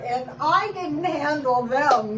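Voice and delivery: ordinary delivery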